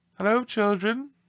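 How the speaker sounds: sweet, very high-pitched voice. Reading a story aloud, someone greets the schoolchildren in a sweet voice. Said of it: "someone said in a sweet voice".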